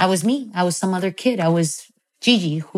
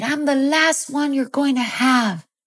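pitched-up, broken English; 8 semitones higher than usual. Retelling how mom answered when asked what number she was, imitating mom's broken English. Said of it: "answered me back in broken English".

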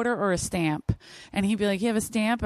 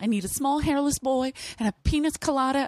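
yelling, calling out loudly with raised pitch; 5 semitones higher than usual. Retelling a coworker's kitchen improv, imitating someone yelling. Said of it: "yelling out".

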